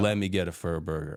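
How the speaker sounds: usual speaking voice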